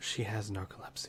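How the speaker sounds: hushed whisper. In a role-play, a character answers Scyther about the sleeping companion, lowered voice. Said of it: "he kind of lowers his voice".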